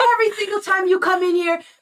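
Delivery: mock furious screaming. Retelling an angry customer's complaint about his order: imitating a furious customer screaming. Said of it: "screaming at the top of his lungs".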